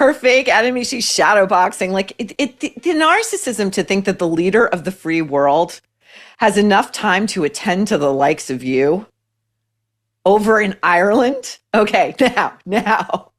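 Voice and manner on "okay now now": cracked, breaking voice, cracking mid-phrase. Reacting to something hilarious, voice cracking. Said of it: "my voice cracked".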